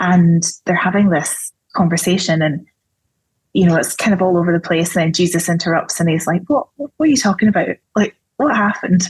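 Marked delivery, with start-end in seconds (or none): 6.5-9.1 slight put-on Scottish accent. Retelling the story where Jesus interrupts the disciples, in a slight Scottish accent. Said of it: "not quite in a Scottish accent".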